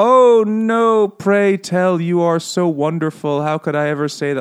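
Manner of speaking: put-on high, slow, fawning old-fashioned speech. Describing how characters in 1800s literature talk, mock-obsequious 1800s speech. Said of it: "obsequious almost".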